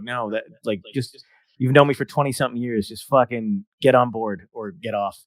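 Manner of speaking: plain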